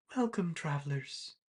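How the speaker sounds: very calm, tranquil, serene voice. Narrator voices a woman greeting the travelers, in a very calm voice. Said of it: "you just hear a very calm voice".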